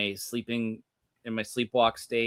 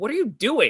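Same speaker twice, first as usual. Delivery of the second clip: acted-out, very high-pitched, accusing tone; 10 semitones higher, 4 dB louder than usual. Retelling how a wife questioned a sleepwalker: imitating an accusatory question. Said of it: "like, accusatory".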